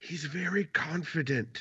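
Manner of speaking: half-whispered stage whisper, to one side. Half-whispering an aside to Missus Father Winter in a game: half-whispering in character. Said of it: "I'm gonna whisper to Missus Father Winter".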